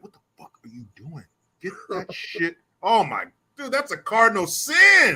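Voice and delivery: hard scolding tone under the breath. Retelling how fathers scold their kids somewhere quiet like church: mock hushed scolding. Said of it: "somewhere that's really quiet and you're not supposed to be loud".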